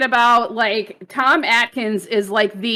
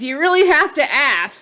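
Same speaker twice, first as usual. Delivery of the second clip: normal talking voice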